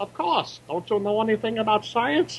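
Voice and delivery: horrible, overdone, fake German mad-scientist accent. Ranking horror movie tropes, introducing the crazy scientist in a horrible german accent. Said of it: "That's a horrible German accent".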